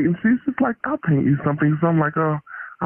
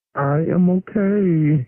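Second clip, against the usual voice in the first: a little nervous, with a drawn-out "okay". A guest on the show answers the hosts' greeting, nervous. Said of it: "you sound a little bit nervous".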